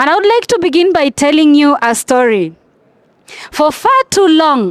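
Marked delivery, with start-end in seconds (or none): 3.5-4.7 far too long stressed, peak on far. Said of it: "underline the word far too long".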